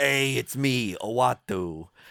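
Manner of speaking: put-on slow, drawling old man voice with Brooklyn accent. Pitching a casting idea for a cosmic character, Uatu as old Brooklyn man. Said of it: "That's like an old man in Brooklyn".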